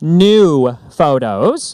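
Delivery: "new" said slowly, deliberately, carefully enunciated, words spaced. Saying new photos slowly so it isn't misheard, slow careful 'new photos'. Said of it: "I have to say that slowly".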